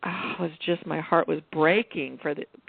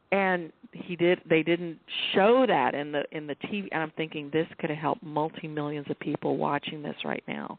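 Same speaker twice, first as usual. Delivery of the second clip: ordinary talk, nothing marked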